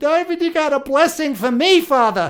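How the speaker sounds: mock, very high voice through tears. Retelling how a son cried and begged his father: imitating someone crying. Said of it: "he is just crying and telling me".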